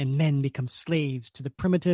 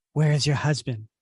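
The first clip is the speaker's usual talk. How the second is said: hissing, snake-like reptilian woman's voice. Describing a scene where a half-reptilian woman questions Viper, hissing. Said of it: "and she hisses at Viper".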